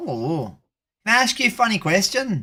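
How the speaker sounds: put-on Irish accent. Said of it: "it's Irish accent for the rest of the stream".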